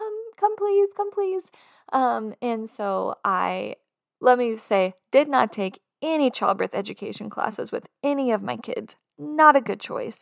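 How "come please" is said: put-on yell, much higher. Retelling calling for her husband from the bathroom, retelling a yell. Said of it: "I'm yelling for my husband".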